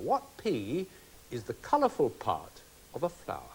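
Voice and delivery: slow, soft, carefully paced, deliberate reading. Quiz host reads the next question to the contestants, slow and deliberate. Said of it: "I'll do it slowly for you".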